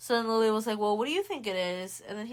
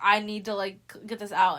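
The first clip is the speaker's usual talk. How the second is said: ordinary delivery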